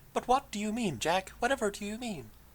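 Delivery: hushed, high, put-on transatlantic half-English, half-American accent. Trying out the way a woman speaks, addressing Jack, in an artificial voice, not quite American, not quite English. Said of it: "that voice that sh- the way she speaks".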